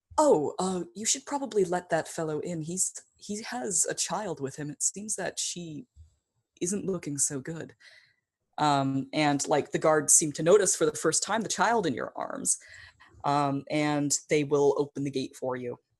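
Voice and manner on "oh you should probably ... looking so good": gentle, soft-spoken voice. A storyteller voices someone approaching the listener's character from behind, in a soft voice. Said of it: "you hear a soft voice say".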